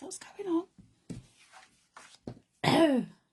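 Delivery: hoarse, very high-pitched, voice giving out. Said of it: "I'm losing my voice".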